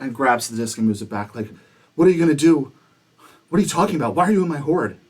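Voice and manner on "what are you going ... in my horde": raised, pitched-up, defensive dragon voice. Voicing a dragon who finds someone in her hoard, pretty defensive. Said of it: "is pretty defensive".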